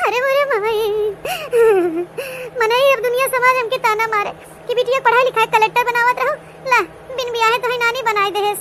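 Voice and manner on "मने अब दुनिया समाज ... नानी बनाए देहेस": tearful, crying voice. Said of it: "हमें तो बड़की जीजी देख के रोवाई आवत है".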